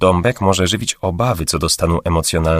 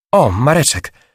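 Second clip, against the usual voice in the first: sudden realizing call out, with raised pitch; 8 semitones higher than usual. A woman spots a man about to enter the men's room, calling out in sudden realization. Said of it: "zawołała w nagłym olśnieniu Matylda".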